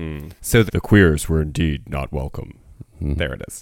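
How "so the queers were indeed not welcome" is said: deep voice-over narrator voice. A speaker redoes a narrated line, going deeper: deeper narrator voice. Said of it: "I think I need to go deeper".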